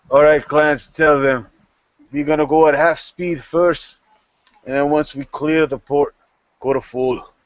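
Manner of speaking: loud barked, commanding captain-style voice. Narrator voicing a ship captain giving orders to his first mate, barking orders. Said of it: "the captain bark bark back".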